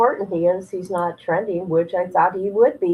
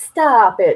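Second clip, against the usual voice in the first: loud attempt at a Boston accent; 2 semitones higher, 6 dB louder than usual. Testing how well you can do regional accents, a Boston accent attempt. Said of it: "trying to talk in an accent of people in Boston".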